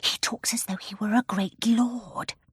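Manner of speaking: theatrical whisper. Sitting on the brown bear's knee, Jane speaks to her companion in a whisper. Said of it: "Jane said in a whisper".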